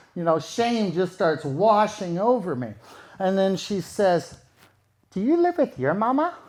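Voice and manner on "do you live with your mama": put-on small, higher, childlike six-year-old voice. Retelling what she said on waking: little kid voice, six-year-old. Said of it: "in this little kid, like a six, seven-year-old voice".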